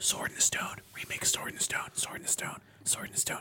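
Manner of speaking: put-on whispering. Imitating family members prompting a contestant: imitating whispering. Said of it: "They're all whispering".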